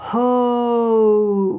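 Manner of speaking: very slow hope, stretched so the vowel glides. Pronunciation lesson on the diphthong in hope, with 'hope' drawn out very slowly. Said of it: "if I say hope very slowly, we get this".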